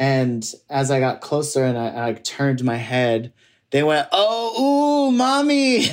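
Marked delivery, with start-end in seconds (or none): 4.1-5.9 very high street catcall with drawn-out Oh. Retelling how guys on the street hollered: imitating men hollering. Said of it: "these guys were hollering and going".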